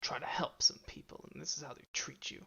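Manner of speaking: mumbling grumble, as if to herself. Voicing a character heading off, mumbling to herself. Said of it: "she's mumbling to herself".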